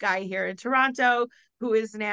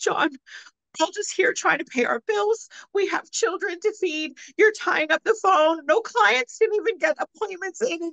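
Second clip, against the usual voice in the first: put-on hysterical crying, higher; 10 semitones higher than usual. Retelling her outburst at a man tying up the phone line, imitating hysterical crying. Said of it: "she was into absolute hysterical tears".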